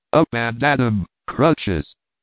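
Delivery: plain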